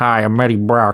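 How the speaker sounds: mock, deliberately bad American accent. Speaker quotes the reporter's introduction, mocking Eddie Brock's American accent. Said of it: "Hardy's American accent is just so distracting".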